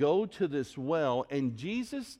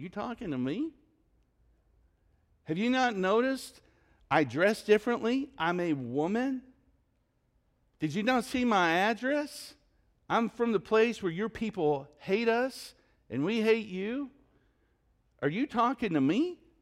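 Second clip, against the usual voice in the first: put-on sarcastic woman's voice, pitched high; 7 semitones higher than usual. Retelling a lady's reply to a request for water: imitating a sarcastic reply. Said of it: "She replies with sarcasm".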